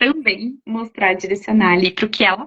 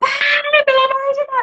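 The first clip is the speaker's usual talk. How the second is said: desperate, very high shriek while crying. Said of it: "se você se descontrolar".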